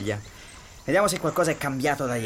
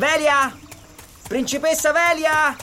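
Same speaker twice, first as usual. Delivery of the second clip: loud, high-pitched shout. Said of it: "non urlare!".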